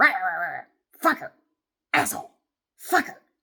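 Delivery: loud, snarling, hissing, growling grumble. Imitating a neighbor behind the house: imitating someone grumbling and growling. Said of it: "grumbling and growling and hissing".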